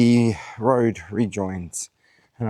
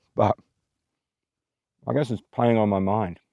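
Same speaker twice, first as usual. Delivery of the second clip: speaking with mouth full, chewing, slower. Eating while talking to listeners, talking with mouth full. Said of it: "talking with my mouth full".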